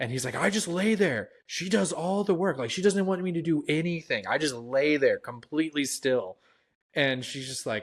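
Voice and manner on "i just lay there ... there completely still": play-acted yell, high, at the top of the lungs. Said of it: "screaming this at the top of his lungs".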